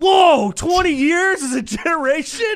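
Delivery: very high, loud, sudden broadcaster outburst. Retelling the booth moment, imitating Tony Romo. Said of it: "Tony Romo is just like".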